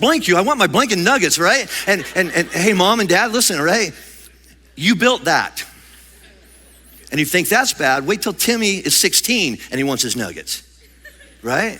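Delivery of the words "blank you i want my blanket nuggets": put-on child voice, much higher. Speaker acts out a child's reply in a story, imitating Timmy. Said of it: "And Timmy's like".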